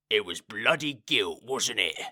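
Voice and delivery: low, growled grumble. A narrator reads the coachman's line to Moist, growled. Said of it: "he growled".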